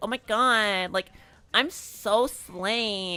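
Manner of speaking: nasally voice, nasal tone. Showing what a nasally voice sounds like: nasally voice. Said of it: "talk way up here".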